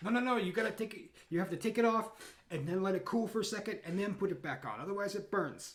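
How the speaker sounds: high-pitched scolding. Voicing Don Vicente yelling instructions at a player's character: voicing Don Vicente yelling. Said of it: "he's yelling at you like".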